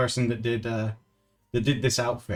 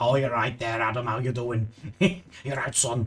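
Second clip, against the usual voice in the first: mock Liverpool Scouse accent. Retelling a phone call with a lady from Liverpool: imitating a Scouse accent. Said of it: "a very specific accent".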